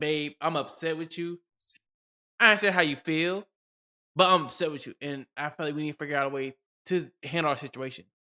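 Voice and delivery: ordinary talk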